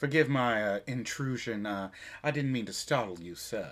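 put-on southern belle voice. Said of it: "a little too much Southern Belle".

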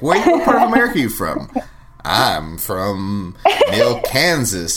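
put-on clumsy, over-effortful American accent, swooping pitch. Speaker imitates a man's attempt to sound american, asking where someone's from: bad american accent. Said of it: "It's bad".

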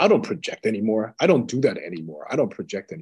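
self-assured, confident, sure-of-himself tone. Retelling what a man in a talk about spirituality answered: imitating someone saying it with confidence. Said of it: "he said it with such confidence".

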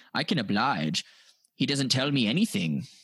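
put-on Australian accent. Quoting a reporter from an interview: imitating an Australian accent. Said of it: "he had an Australian accent".

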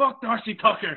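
screamed, very high, very loud and shrill. Retelling a dad's reaction to a playoff goal: imitating dad screaming. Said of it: "I just remember my dad screaming".

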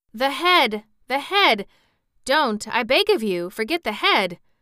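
high, loud, excited crying out. The Wogglebug pleads while the powder is sprinkled on the thing, crying out excitedly. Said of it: "cried the Wogglebug excitedly".

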